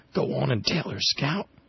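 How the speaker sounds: high, hushed half-whisper. Narrating a story, reading a line someone half-whispers to the narrator: half-whispered. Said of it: "someone whispered".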